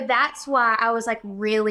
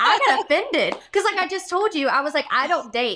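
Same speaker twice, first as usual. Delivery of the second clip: plain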